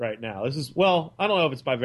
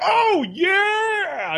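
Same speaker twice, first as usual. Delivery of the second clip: play-acted very high screaming yell, "yeah" stretched; 6 dB louder than usual. Retelling how Brad yelled to a stranger on the other side, imitating Brad screaming. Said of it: "He's just screaming at this guy".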